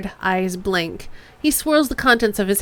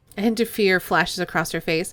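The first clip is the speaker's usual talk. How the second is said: plain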